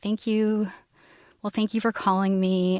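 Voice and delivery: mock nice, kind tone. The speaker recalls a man who came over when called, imitating him being so nice. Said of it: "he was just so nice".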